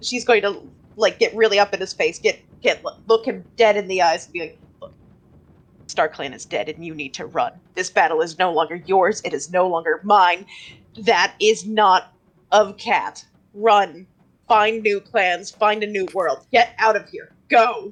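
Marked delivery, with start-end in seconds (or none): 4.8-17.9 slow, authoritative, commanding voice. Playing a character urging a child to flee: commanding in-character voice. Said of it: "She uses every bit of commanding presence".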